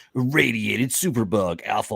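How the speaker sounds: dramatic, epic movie trailer announcer read. Praising comic artwork, reading a page's title aloud in a movie voice. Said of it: "like in that movie voice".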